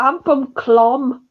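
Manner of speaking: put-on Bolton accent. Mocking an alien's line from an episode: imitating a Bolton accent. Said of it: "Or Bolton, sorry".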